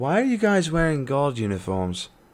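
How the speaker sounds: put-on English accent. Voicing a character questioning the group, in an English accent. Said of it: "why are you giving Lorena Sar- Saris's accent?".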